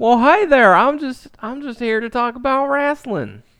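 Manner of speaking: put-on West Virginia accent. Guessing who a guest really is, voicing Dave from West Virginia. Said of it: "Dave from West Virginia".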